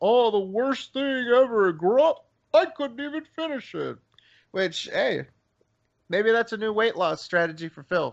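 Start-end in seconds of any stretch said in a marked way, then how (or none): 0.0-4.0 overblown, pitched-up, dramatic complaining tone. Retelling a friend's complaint about a burrito: imitating Phil complaining. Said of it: "hyping this fucker up for, like, a week as".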